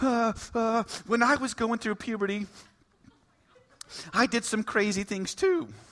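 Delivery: soft, slow, nervous voice cracking. Retelling how her nervous stepdad spoke to a government agent: imitating a cracked voice. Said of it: "her stepdad says with this cracked voice".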